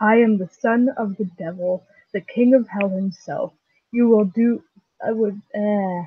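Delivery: ordinary delivery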